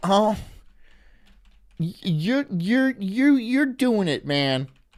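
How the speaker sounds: slow, sympathetic, pitying, encouraging tone. Acting out what viewers would comment out of pity: imitating a pitying commenter. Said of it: "this is you commenting".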